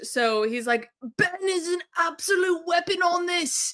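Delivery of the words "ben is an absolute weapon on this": bad, unconvincing, pitched-up put-on Australian accent. Quoting what David said about Ben to another speaker, in a bad Australian accent. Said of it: "not really Australian accent".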